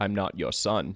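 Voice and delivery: put-on deep, low whisper. In a story, a deep voice whispers over the baby monitor: deep Darth Vader whisper. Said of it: "You even did the low voice there".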